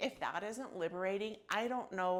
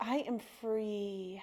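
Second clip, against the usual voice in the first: heartfelt, full conviction, "free" drawn out. Leading a repeated affirmation after asking for it: saying it like you mean it. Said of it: "Say it like you mean it".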